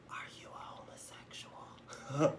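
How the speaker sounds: whispered voice. Act out someone keeping you from sleep with a question, retelling his whisper. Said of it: "he whispers".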